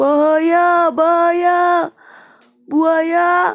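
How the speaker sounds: loud ringing shout. Narrator reads the father warning Tintan and the mother: loud, echoing warning call. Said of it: "suara keras, lantang menggema".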